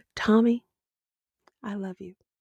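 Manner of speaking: steady, composed, calm and direct delivery. Retelling a vow spoken into a microphone, imitating Lori speaking quietly and calmly. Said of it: "you were just so quiet, so calm".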